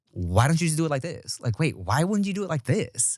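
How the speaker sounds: bossy, superior, know-it-all attitude. Retelling a recurring argument, imitating her attitude. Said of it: "her face and attitude is always like".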